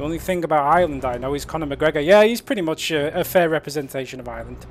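normal talking voice

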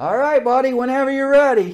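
high, booming, shrill yell from far back. Retelling a man yelling to the speaker from the back of the room, retelling a yell. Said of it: "he's like yelling at me from the back of the room".

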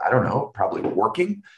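sarcastic, tongue-in-cheek delivery. Retelling a late-night talk with the boss about staff staying: retelling own sarcastic reply. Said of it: "using the love language of sarcasm".

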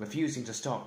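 ordinary delivery

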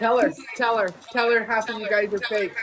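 ordinary delivery

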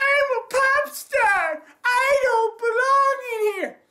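play-acted very high, drawn-out sobbing whine. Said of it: "he comes in crying".

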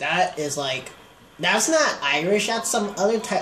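put-on offended tone.

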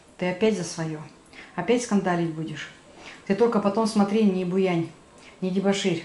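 ordinary talk

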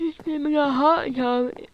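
words stretched by yawning. Playing Minecraft for viewers, building a hot tub, yawning while talking. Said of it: "Sorry, I was yawning".

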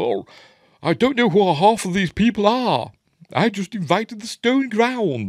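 put-on very high, plummy upper-class posh accent. Retelling a young chap at his own posh party, in a plummy posh accent. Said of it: "he's very plum in his mouth, accent is all".

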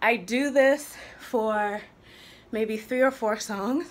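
winded, puffing and out of breath. After doing this for three or four songs, the speaker talks to viewers out of breath. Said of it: "You hear I'm out of breath".

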